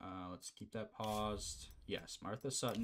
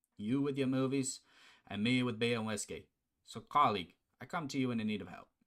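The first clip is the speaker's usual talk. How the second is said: put-on Irish accent, louder; 2 semitones higher, 8 dB louder than usual. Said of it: "he's Irish, isn't he?".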